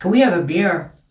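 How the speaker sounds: put-on Irish brogue accent. Retelling an Irish man at the hotel asking for a beer, Irish accent. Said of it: "I liked Irish accent until I heard this dude ask for".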